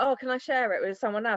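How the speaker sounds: usual speaking voice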